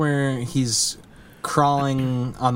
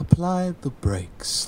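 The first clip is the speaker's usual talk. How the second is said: put-on prim, stuffy British man voice, pitched up; 6 semitones higher than usual. Recounting a driving school bit they liked, quoting him: stuffy British man voice. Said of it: "this stuffy British man is like".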